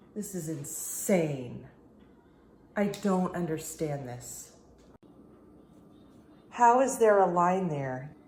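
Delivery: baffled, frantic, panicked, freaked-out disbelief. Showing an unexpected line before it disappears: freaking out. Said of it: "I'm sorry, I'm freaking out".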